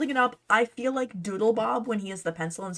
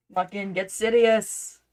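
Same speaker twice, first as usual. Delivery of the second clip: slow, bad, fake Scottish accent. Repeating a running joke line in a bad Scottish accent. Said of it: "in, like, a bad Scottish accent".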